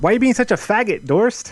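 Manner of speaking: high-pitched, taunting, jabbing tone. Showing what Milky would say to Dorst: Milky impression. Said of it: "that's a really good Milky impression".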